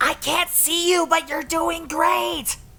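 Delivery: very high, drawn-out stage whisper. Voicing a character cheering on another player sneaking past a sentry: loud whisper. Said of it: "Button's just loud whispering".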